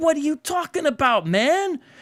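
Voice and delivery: very high, worked-up, frustrated exasperation. Reacting to a passage under review: frustrated, worked up. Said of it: "this is a little, uh, frustrating".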